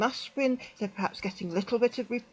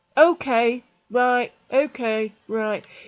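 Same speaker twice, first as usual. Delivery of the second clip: mock grudging belligerence, loud and very drawn out; 8 dB louder than usual. Retelling a man's grudging reply to being asked to go to hospital; mock-belligerent, reluctant. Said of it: "very belligerent, very reluctant".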